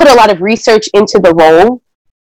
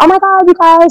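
put-on British accent, much higher pitch, slower pace; 5 semitones higher than usual. Recounting a congratulations video for the show's 100th episode: Cynthia's British accent. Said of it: "with her British accent".

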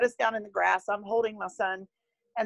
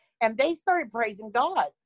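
ordinary delivery

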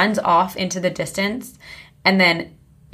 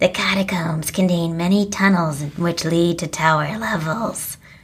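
spooky, creepy documentary-style voiceover narration. Imitating the voice that comes on in a documentary: creepy narrator voice. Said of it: "It's so creepy".

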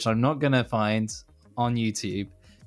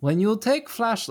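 put-on Russian accent, much higher; 11 semitones higher than usual. Explaining the basics, the speaker slips into a Russian accent. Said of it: "Why am I using an accent?".

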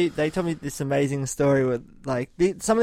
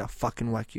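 hushed whisper, lower and quieter; 4 semitones lower, 8 dB quieter than usual. Recounting a father's threat to his daughter, retelling a whispered threat. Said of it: "He whispered it to her and I heard it".

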